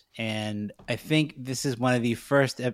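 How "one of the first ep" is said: ordinary talk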